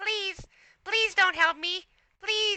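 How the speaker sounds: very high, little insect voice, like a fly. Speaker demonstrates a childhood bit, speaking as a fly: tiny fly voice. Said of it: "Like a fly".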